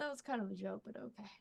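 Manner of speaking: very hushed, quiet under-breath mutter, low. Playing Tessell in a tabletop game, replying to Sai, muttering under breath. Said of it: "under their breath be like".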